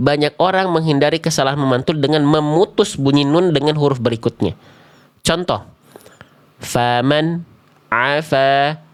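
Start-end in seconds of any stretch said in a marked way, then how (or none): 6.6-8.8 short silent break between faman and afa. Showing a common way to cut the nun sound: pause between faman and afa. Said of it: "terdengar ada jeda hening di sini".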